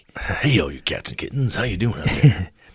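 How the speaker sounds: put-on smooth jazz radio dj voice. A game master introduces the week's adventure in a smooth jazz DJ voice. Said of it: "More of a smooth jazz kind of D M".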